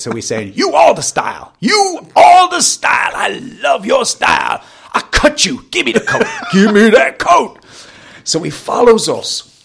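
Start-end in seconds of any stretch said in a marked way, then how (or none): 0.6-7.6 very high, swooping, flattering-threatening shouted harangue. Recounting a stranger following him and demanding his coat: imitating a man shouting threats. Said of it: "paying me compliments and threatening me".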